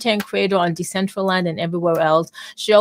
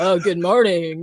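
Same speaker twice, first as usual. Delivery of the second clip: put-on resonant news-anchor voice. Teasing a guest about how he comes on: imitating Webby's resonant news-anchor voice. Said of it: "that voice that resonates like he's, like, he's been in this to win it forever".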